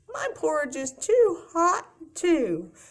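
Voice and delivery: tiny, high, swooping sing-song voice. Telling the three bears story, Baby Bear answering after Mama Bear, tiny Baby Bear voice. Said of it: "he had a little tiny, tiny voice".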